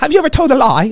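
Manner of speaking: bad put-on New Zealand accent. Show how Ray Comfort takes people through the law, as Ray Comfort in a terrible New Zealand accent. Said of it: "worst uh, New Zealand accent".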